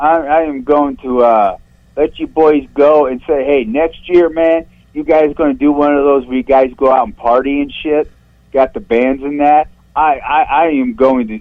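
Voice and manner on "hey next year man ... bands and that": ordinary talk, nothing marked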